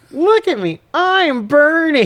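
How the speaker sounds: very high, dumb-sounding delivery. Retelling a film's badly delivered line: Ralph Wiggum voice. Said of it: "like she's fucking Ralph Wiggum".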